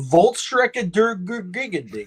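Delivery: high, loud, stretched-out, stuttering gibberish. Giving a film title as the Germans call it: sounding like the Swedish Chef. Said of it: "You sound like the Swedish Chef".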